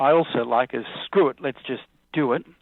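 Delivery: ordinary delivery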